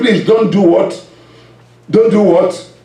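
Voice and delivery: ordinary talk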